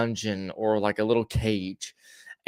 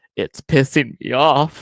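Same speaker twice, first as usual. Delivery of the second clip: tall lanky man's voice, loud, slow, drawn-out, close-up; 3 semitones higher, 5 dB louder than usual. Retelling how Marcus leaned close to the camera: imitating Marcus. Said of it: "I do it no fucking justice".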